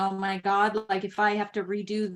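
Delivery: plain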